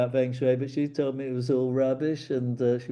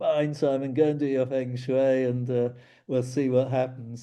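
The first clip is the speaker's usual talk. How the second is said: plain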